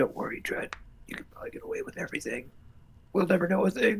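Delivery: very quiet, hushed whisper, close to the ear. Whispering in character to Dredd that he can get away with everything: whispering in his ear. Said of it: "I just whispered to Dredd in his ear".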